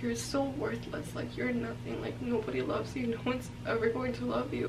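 plain

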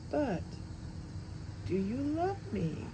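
patient, gentle tone. After Abby's praise, [name] puts a question to her, patient. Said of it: "[name] asked patiently".

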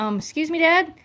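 high-pitched talking dog voice. Speaking for the dog Memphis to Dad: voicing the dog Memphis. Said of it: "Memphis is like".

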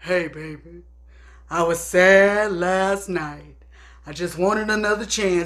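very low, deep, slow talking voice. Illustrating group singers who talk over the music, imitating a deep-voiced talker. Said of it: "deep voice talkers".

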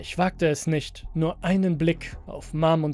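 ordinary delivery, nothing marked

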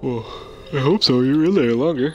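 yawning while speaking. Chatting during a game, the speaker replies while yawning. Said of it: "Sorry, I was yawning".

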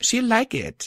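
very high-pitched, defensive tone. Reading a character's reply as she hands over a gift, defensive. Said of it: "Twilight said defensively".

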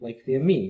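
normal talking voice

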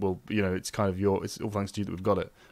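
normal talking voice

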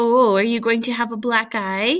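plain reading voice

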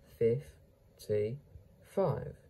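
very slow, stretched-out fifty-five.

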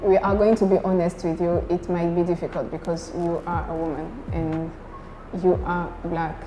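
normal talking voice

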